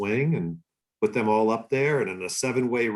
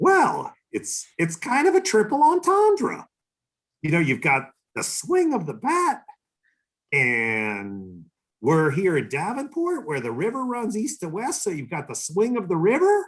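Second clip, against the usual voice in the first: very high-pitched, swooping sing-song voice; 8 semitones higher than usual. Retelling how the man selling you the team explained its name, in Kraus's very high-pitched voice. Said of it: "in his very high pitched voice".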